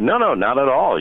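ordinary talk, nothing marked

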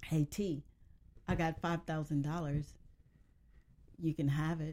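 plain

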